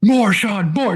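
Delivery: mock high-pitched screaming, loud and encouraging. Recalling someone behind them screaming during a bench press: retelling someone screaming. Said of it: "just screaming at me".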